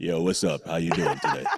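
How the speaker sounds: very deep, low, put-on radio-host voice. Joking about sounding better on next week's show: put-on radio voice. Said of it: "We gotta work on our radio voices".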